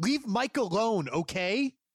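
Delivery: sharp, cutting tone. Recounting a game scene, the speaker repeats snapping at another character, retelling a sharp retort. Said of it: "so sharply say".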